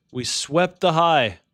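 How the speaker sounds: sudden, high, loud, excited yell. Trading live on stream, calling out a market move: yelling. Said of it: "Sorry for yelling".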